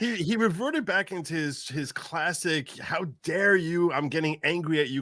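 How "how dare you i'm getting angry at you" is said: put-on angry old politician tone. Mocking a politician's classic angry tone: imitating Joe Biden's angry tone. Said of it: "kind of tone".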